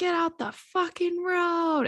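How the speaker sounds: high, toothless-lisp scream. Retelling a toothless woman honking at them, imitating a woman screaming with a lisp. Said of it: "she started honking at us and she was like".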